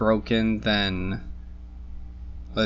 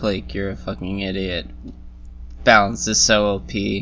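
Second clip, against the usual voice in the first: usual speaking voice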